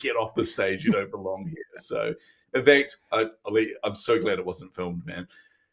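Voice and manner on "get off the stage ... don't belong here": ordinary delivery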